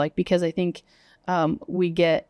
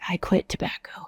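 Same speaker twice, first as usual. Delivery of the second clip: breathy, hushed, whispered voice; 3 dB quieter than usual. Retelling what people say at their outreach table, imitating a whisper. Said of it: "why are you whispering?".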